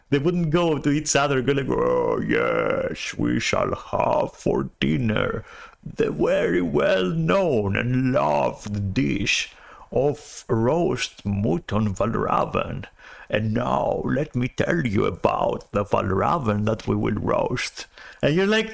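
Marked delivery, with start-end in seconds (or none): 1.7-17.8 plodding, deliberate, slow, drawn-out delivery. Mocking how the bear characters talk to each other: imitating slow bear-people talk. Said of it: "they would also talk slowly".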